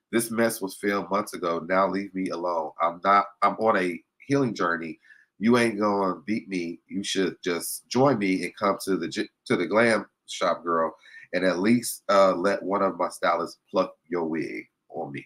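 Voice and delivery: ordinary talk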